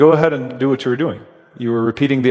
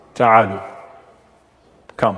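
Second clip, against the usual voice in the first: play-acted firm, stern, commanding tone; 3 semitones lower than usual. Retelling the messenger's command to men mocking the call to prayer, mock-stern. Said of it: "in a stern voice".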